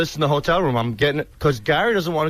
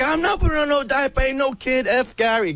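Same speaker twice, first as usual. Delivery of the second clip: play-acted shrill, very high, angry yelling rant; 10 semitones higher than usual. Retelling how a man yelled and cursed about a diaper: imitating someone yelling angrily. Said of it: "he's yelling at me and cursing at me".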